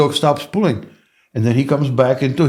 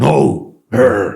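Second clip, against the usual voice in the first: low, deep, rough dog-like growl; 3 semitones lower than usual. Showing how he corrects his dog like a dog would: growled deep no. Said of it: "Deep voice. ... I'm gr- growling just like dog".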